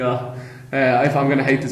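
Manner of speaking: ordinary talk, nothing marked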